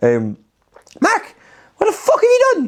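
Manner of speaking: very high-pitched, swooping put-on voice. Retelling how the speaker's mum reacted, imitating mum's high voice. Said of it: "when I do an impression of her, it's always high voice".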